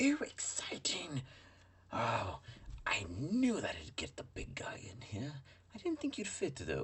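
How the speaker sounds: tiny, high, swooping, floaty little creature voice. Describing voices heard, the speaker performs the tiny floaty version inside the device. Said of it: "a little mini floaty version of you inside the device with the voice of".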